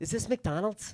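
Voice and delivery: hushed, mock appalled, horrified voice. Telling about parents at a Hollywood school spotting fast food, imitating a horrified parent. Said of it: "Like there was a bullet casing on the ground".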